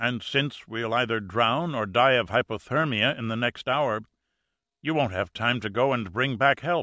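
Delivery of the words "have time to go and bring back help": ordinary delivery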